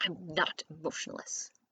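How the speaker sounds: hissed, indignant voice. Reading a story aloud, a character answering an insult: hissed. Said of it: "Percy hissed".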